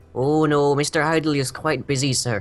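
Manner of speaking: put-on Irish and Scottish accent blended together. Voicing a servant character answering a question: Irish-Scottish accent. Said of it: "I'm going into Irish and Scottish again".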